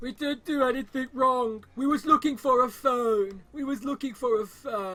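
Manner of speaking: very high, loud, sobbing tearful pleading tone. Retelling what caught teenagers said to the police: imitating crying teenagers. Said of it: "They were crying".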